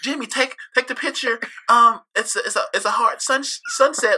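squeaky, very high commercial-style voice. Mimicking a line from a commercial: imitating the Taco Bell commercial girlfriend. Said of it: "The Taco Bell commercial".

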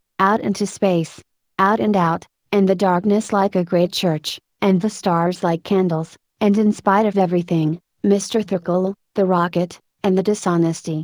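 ordinary talk

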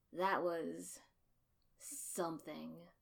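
dry, flat, unimpressed deadpan understatement. Asuma-sensei, regarding the training field after the fight; dry. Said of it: "Asuma-sensei said dryly".

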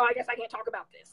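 mocking, sulky, flouncing, resigned tone. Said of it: "I'm not, like, trying to mock".

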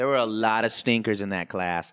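loud, boastful impression voice.

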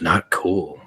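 whispered. Voicing a character who tucks something into his Speedo: whispering. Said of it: "just kinda whispers".

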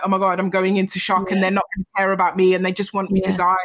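ordinary delivery

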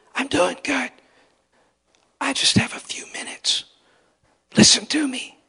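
very high, hushed whisper. Retelling a friend's secret phone call, imitating someone whispering. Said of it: "and he's whispering".

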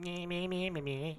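high, nasal, bleating meh. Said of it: "without sounding like".

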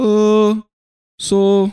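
Japanese accent impression.

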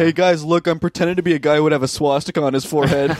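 heavily ironic, sarcastic announcing voice. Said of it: "He was being ironic".

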